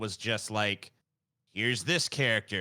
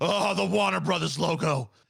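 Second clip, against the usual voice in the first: loud, high, thrilled, drawn-out oohing; 6 semitones higher, 5 dB louder than usual. Imitating a friend getting excited over a movie logo: imitating Paul getting excited. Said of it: "Paul's like".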